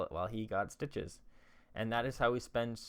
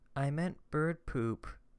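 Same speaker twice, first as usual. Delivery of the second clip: plain, low-key, understated little aside; 4 semitones higher than usual. Retelling what an ex said under her breath: imitating Sarah saying it quietly. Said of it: "ever so quietly under her voice".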